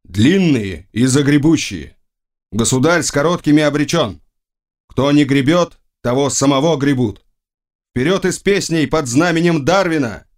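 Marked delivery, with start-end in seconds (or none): none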